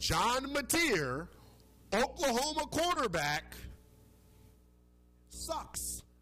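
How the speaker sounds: deliberate, very slow, drawn-out, very high-pitched delivery. Repeating a verdict on a quarterback a second time: saying it very slow. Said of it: "I'll say it again very slow".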